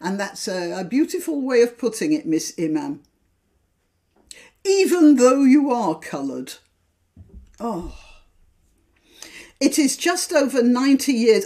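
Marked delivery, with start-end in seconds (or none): 0.0-6.5 heavy sarcasm, backhanded, praise not meant. Reacting to a newspaper article just read aloud: sarcastic. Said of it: "that was sarcastic".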